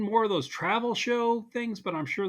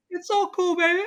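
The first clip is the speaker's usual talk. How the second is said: very high, loud, put-on cool-guy voice; 13 semitones higher, 5 dB louder than usual. Joking that it's all cool in a put-on cool voice. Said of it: "That's your cool voice".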